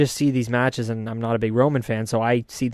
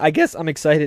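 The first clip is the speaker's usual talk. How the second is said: slight voice break partway through; 3 semitones higher than usual. In a conversation about an upcoming wrestling match, voice cracking. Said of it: "A little voice crack".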